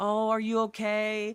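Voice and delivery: put-on baby talk, high-pitched and slow. Acting out a dog owner checking on their dog: imitating a dog owner's baby voice. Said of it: "You put on the baby voice".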